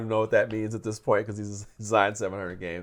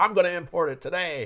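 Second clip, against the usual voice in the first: rough, unpractised, pitched-up voice; 7 semitones higher than usual. Retelling what Tom said about importing a game: Tom impression. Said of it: "Was that your impression of Tom?".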